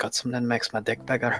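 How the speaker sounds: acted-out whisper. Telling the group what he whispered to the little gnome, retelling a whisper. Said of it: "I whispered to the little gnome".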